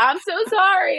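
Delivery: very high, sobbing, bawling wail. Recalling crying at work while a coworker was fired, retelling her bawling. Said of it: "I am bawling my eyes out".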